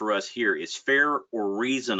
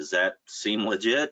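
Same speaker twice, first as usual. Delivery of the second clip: usual speaking voice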